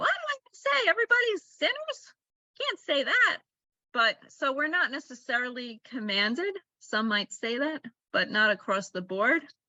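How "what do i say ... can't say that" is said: thin, screechy little voice pitched very high. Remembering Rabbi Joel Roth's words on women's obligation: imitating Rabbi Joel Roth's little screechy voice. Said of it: "He has this little screechy voice".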